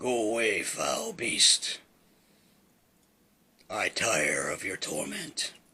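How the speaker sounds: deep, rough, gravelly rasping voice. Voicing the figure she hears as she steps through the door, deep, gravelly voice. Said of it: "she hears a deep, gravelly voice".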